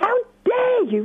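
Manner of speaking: high, indignant, outraged outburst.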